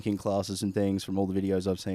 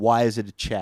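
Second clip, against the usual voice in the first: plain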